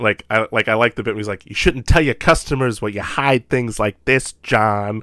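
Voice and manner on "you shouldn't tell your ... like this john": put-on Chicago accent laid on thick. Quoting a favorite Chucky line: thick Chicago accent as Chucky. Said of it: "thick sort of Chicago accent".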